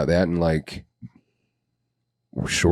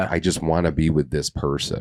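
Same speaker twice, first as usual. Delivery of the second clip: ordinary talk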